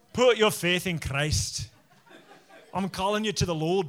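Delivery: put-on Scottish accent, preaching style delivery. Imagining preaching a whole sermon, in a Scottish accent. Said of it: "preach an entire sermon just in a Scottish accent".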